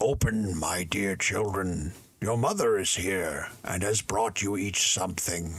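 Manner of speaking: coarse, rough, gruff wolf voice. In a fairy tale, the wolf knocks at the little goats' door posing as their mother: rough wolf voice. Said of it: "perceived from the rough voice that it was the wolf".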